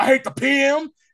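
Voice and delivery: belted out loud. Retelling a character's intro line: imitating Hobie Brown saying it loud. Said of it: "And then he says real loud".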